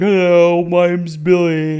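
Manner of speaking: slow, loud dim-witted creature. Describing a dumb abomination creature and how he talks, in Billy's dumb creature voice. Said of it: "That's how he talks".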